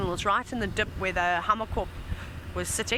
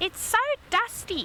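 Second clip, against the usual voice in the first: clumsy put-on South African accent, very high; 12 semitones higher than usual. Recalling a complaint heard as a safari guide: bad south african accent. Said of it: "That was a bad South African accent".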